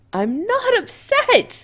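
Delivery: very high, piercing, shrill voice. [name] answers Kim, in a shrill voice. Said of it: "[name] says shrilly".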